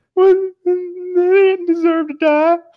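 high, slow, cracking, choked-up voice. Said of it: "my voice is just gonna crack".

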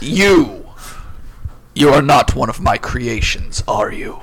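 grand, declaiming, godlike voice of a towering titan. In a tabletop game, the narrator voices a being questioning a player, booming voice. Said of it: "with a booming voice it says".

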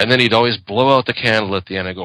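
ordinary delivery

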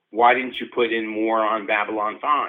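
ordinary delivery

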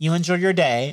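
acted, snide, sarcastic delivery. Retelling a coworker's parting line: imitating a sarcastic goodbye. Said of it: "she gave me a sarcastic".

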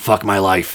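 confiding, secretive stage half-whisper. Retelling what a performer half-whispered while taking a tip: imitating Virginia West half-whispering. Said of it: "get real close to you, and whisper".

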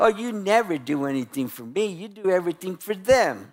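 put-on nagging, pleading tone. Acting out an example of nagging and begging: mock nagging and begging. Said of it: "that is nagging and begging".

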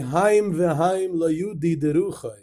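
put-on Hungarian accent. Quoting the Minchas Elazar of Munkach's quip, in his heavy Hungarian accent. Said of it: "with his very heavy Hungarian accent".

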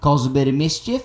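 put-on Australian accent. Claiming to do a good Australian accent, then doing an Australian accent. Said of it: "I can do a good old Australian accent".

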